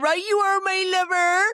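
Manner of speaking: very high, loud Cornish accent.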